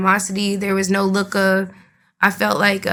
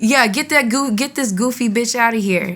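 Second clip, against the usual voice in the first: mild, half-hearted, toned-down angry yell; 3 semitones higher than usual. Retelling how a man kicking the speaker out yelled: imitating someone yelling.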